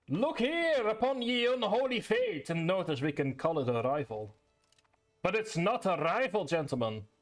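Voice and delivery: put-on Scottish accent, slipped into. Speaker addressing gentlemen about a rival, drifting into a Scottish accent. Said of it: "I don't know why I'm moving into a Scottish accent".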